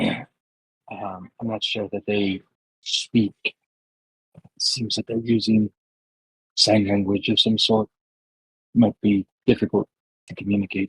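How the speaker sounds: hushed whisper spoken as an aside. Leaning in to speak privately to a companion, whispering. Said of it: "I'm gonna whisper it".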